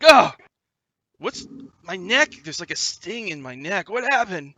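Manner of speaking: high, very loud screamed delivery. A game narrator voices a man just slapped awake: screaming. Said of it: "he screams".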